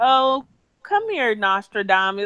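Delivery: smug, self-satisfied, gloating taunting tone. Retelling how a cast member taunted someone: imitating a smug taunt. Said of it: "she was so smug about it".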